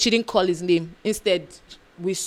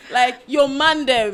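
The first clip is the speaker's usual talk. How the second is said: loud, slow mock Jamaican patois. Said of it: "The patois is not patois".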